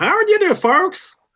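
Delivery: put-on Texas accent, pitched very high. Asked to do a little of it, showing off a Texas accent. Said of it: "to do a Texas accent".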